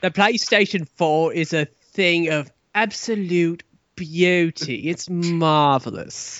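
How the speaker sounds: put-on British accent. Praising the PlayStation four as a joke: Jeremy Clarkson impression. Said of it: "no more impressions".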